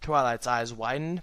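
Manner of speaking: ordinary delivery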